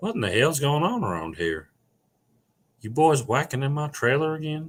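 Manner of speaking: high, sing-song character voice. Running through a string of accents and voices, now a Hank Hill impression. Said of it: "I'll do a Hank Hill".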